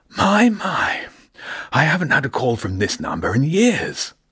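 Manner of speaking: put-on eager, slow, wheezy elderly voice with swooping pitch. Answering an unexpected phone call, the voice on the line speaks excitedly. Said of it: "it said excitedly".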